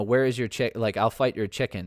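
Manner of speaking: ordinary delivery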